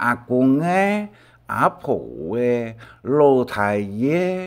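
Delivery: slow, drawn-out words. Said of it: "像这讲啊".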